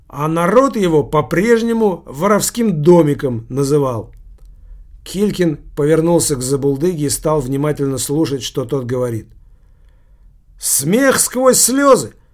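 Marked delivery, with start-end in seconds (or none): 10.5-12.0 eager, high-pitched, loud exclaiming outburst. Narrator reads a drunkard speaking to an attentive listener, exclaiming. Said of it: "воскликнул тот".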